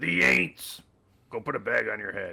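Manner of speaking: very gruff, rough voice. Retelling a former boss talking Super Bowl in his office, imitating his gruff voice. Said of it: "he has this like really gruff, gruff voice".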